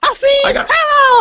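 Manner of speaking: very high squeak like after breathing helium. Suggesting that Groot might sound like Scrappy-Doo: Scrappy-Doo voice. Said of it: "he might be sounding like Scrappy Doo".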